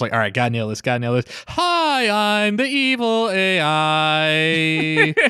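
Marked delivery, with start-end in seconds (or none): 1.5-5.1 put-on hammy kid actor voice, slow and sing-song. Acting out the child actor's first big role: imitating a young kid trying to act. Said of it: "Young kid trying to act".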